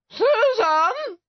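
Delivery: high shout, word drawn out long. Narrating, a mother calls to her daughter to stop playing the violin: shouted. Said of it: "shouted her mother".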